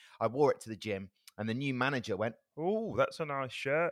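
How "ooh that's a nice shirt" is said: mocking, teasing, higher-pitched mugging-off voice. Retelling what a gym manager said about a shirt: imitating a mocking "mugging off" voice. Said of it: "exactly the same voice".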